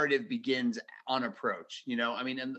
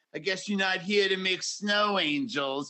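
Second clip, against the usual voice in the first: sassy Bronx cab driver voice, higher and louder; 6 semitones higher, 4 dB louder than usual. Imitating a foul-mouthed toy's line: Paul Lynde meets Bronx cab driver. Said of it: "in this voice that's like Paul Lynde meets, like, a Bronx, like, cab driver".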